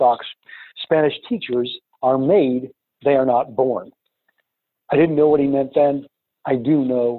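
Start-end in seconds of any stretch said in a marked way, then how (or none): none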